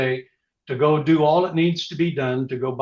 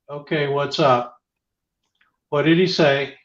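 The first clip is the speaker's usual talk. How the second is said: ordinary delivery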